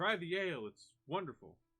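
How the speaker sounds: very loud, very high calling out. Voicing a character calling after the departing party: calling out. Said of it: "he kind of calls to you".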